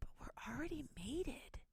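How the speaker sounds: very quiet, high-pitched, hushed whisper. Recounting a TV proposal scene where she answers, retelling a whisper. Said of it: "she whispers like".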